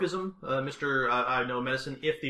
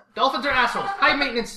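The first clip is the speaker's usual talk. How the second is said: full-on shrill, loud, belted-out delivery; 11 semitones higher, 9 dB louder than usual. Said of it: "full-on Edna Mo-, Mode voice".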